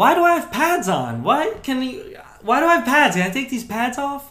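put-on very high, very loud, bewildered little-kid whine. Retelling a player right after his brain got shaken, acting like a little kid. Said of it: "he starts acting like a little kid".

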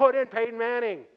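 high, very loud bellowing stadium yell. Fan recalls yelling at the Broncos game from the very beginning, retelling a yell. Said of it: "I started yelling".

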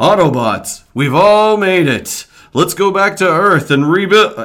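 loud, high robot voice. The speaker shows off a little impression: Ultra Magnus impression. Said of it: "This is my Ultra Magnus".

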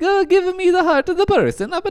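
put-on Italian accent. Debating whether someone sounded Italian, demonstrating a broad Italian accent. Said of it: "if it's a broad Italian accent".

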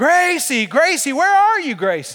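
put-on high, swooping, stretched, sing-song, drawn-out scream. Parent retells searching the house for a missing child, retelling screaming out her name. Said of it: "I'm like screaming out".

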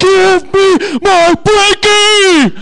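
very loud, very high, very slow shrill drawn-out yell. Retelling chasing a car down the street, re-enact yelling after it. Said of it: "I chased them down the street yelling".

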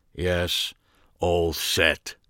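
level monotone with no inflection. Narrator reading a man's reply to the narrator's question, with no inflection. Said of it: "with virtually no inflection in his voice".

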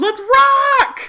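very loud, high, drawn-out screamed battle cry. Retelling a favorite movie scene of strapping on a gun: imitating Vasquez screaming. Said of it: "she straps on that big gun and then just screams".

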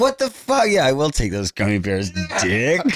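brash, rude tone. Retelling how the other speaker reacted to the gummy bears: imitating the other speaker taking gummy bears. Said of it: "You were like".

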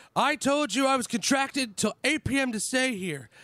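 shouting. Retelling shouting demands at a man at a party: retelling a shout. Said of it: "proceed to shout at him".

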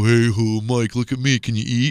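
mock joking, playful taunting tone. Retelling how dad teased them with chicken at lunch, imitating dad's joking taunt. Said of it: "he would jokingly put a piece of chicken on his lip and go".

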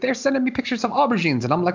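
very high-pitched put-on Scottish accent. Retelling an anecdote from a talk show: imitating a Scottish accent. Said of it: "in his Scottish accent, which I cannot duplicate".

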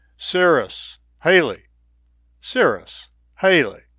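sweet, welcoming, inviting and coaxing call. Retelling calling to angry dogs by name: retelling an inviting call. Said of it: "in my most inviting voice".

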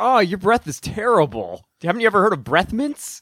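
ordinary delivery

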